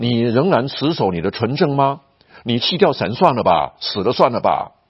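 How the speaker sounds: usual speaking voice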